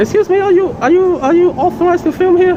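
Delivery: very high, loud, squeaky, panicked voice.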